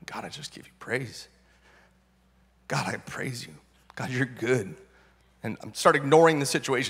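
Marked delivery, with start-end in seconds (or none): 0.1-4.7 low, quiet muttering under the breath. Retelling praying in a hospital waiting room: imitating praying under breath. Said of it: "under my breath".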